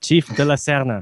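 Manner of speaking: attempted, put-on Spanish accent. Naming a police chief character, the speaker uses attempted spanish accent. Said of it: "That's my attempt at a Spanish accent".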